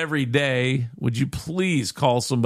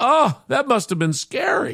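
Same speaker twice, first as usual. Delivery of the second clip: exclaiming in a schoolteacher voice; 10 semitones higher than usual. Telling a joke, quoting the teacher's reply to a little girl, retelling a teacher's exclamation. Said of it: "And the teacher exclaimed".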